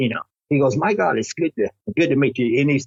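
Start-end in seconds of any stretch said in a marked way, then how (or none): 0.8-2.6 odd, vaguely British, half-British put-on accent. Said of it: "he's talking with an accent".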